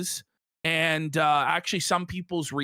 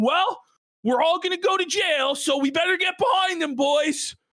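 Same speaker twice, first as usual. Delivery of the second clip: mock angry voice, pitched way up, shouting. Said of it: "starts saying".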